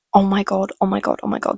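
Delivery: ordinary delivery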